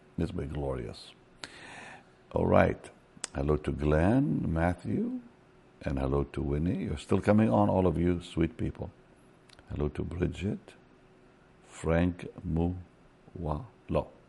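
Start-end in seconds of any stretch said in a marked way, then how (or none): 9.8-14.1 very slow, soft, careful one-by-one enunciation. Greeting viewers by name, not wanting to mess up the names: saying names slowly. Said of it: "I'm saying it slow".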